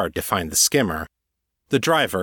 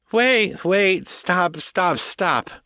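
put-on very high, slow, drunken slurring; 9 semitones higher than usual. A blonde woman flopping around in a swerving skimmer: drunken slurring. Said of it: "her voice slurring drunkenly".

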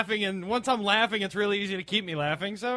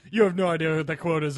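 mock smug, arrogant, talking-down, condescending tone; 4 semitones lower than usual. Imitating how another speaker said a line: imitating arrogant condescending tone. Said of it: "the arrogance and condescension in his voice".

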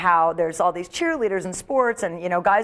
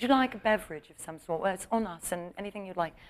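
hushed, soft put-on British accent, woman's voice; 10 dB quieter than usual. Retelling how a woman apologized to the speaker, imitating her british accent. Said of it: "she had that British accent. She's like".

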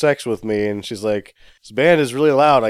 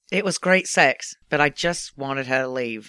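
put-on Australian-sounding accent; 5 dB quieter than usual. Host asking the others to mimic an accent, saying the line: Peter Lowe accent impression. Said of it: "That was Australian".

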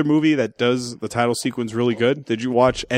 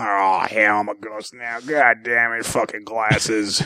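put-on just-woke-up drunk voice; 3 semitones lower than usual. Picturing Nick Nolte as a ghost in the movie, the speaker does him: imitating drunk Nick Nolte. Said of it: "just woke up from a fucking stew".

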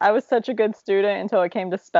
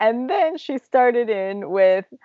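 ordinary talk

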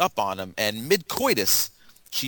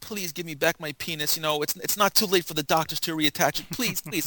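high, desperate, repeated pleading; 5 semitones higher than usual. Retelling a movie scene where a man begs his wife: imitating someone begging. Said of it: "begging his wife".

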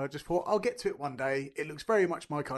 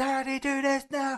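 put-on very high, bossy, drawn-out little-girl shout; 10 semitones higher, 4 dB louder than usual. Retelling a five-year-old shouting at them during a game: imitating Ivy shouting. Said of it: "shouting at me".

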